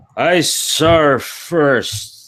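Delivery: put-on boozy drunken voice, high. Narrating Kada drunkenly shoving you and claiming he saw it first, Kada's drunken voice. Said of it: "in a drunken voice says".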